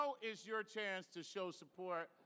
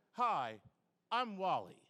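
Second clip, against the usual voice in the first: plain, friendly, affable, lovely tone; 4 dB louder than usual. Retelling how Wally stopped and greeted him in the room: imitating Wally. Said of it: "he stopped me and he just went".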